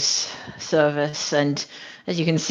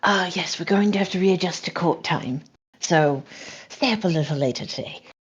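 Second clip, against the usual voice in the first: in a whisper. Speaking in character to the rest of the crew: whispering. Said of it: "to whisper to the rest of the crew".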